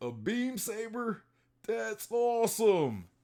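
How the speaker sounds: put-on very high, slow old-man voice. Retelling a scene, voicing an old Luffy in an old man voice. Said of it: "in like an old man voice".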